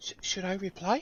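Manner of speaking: whispering. Voicing a character asking the companion beside her whether to reply: whispering. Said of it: "she whispers to Thoradin".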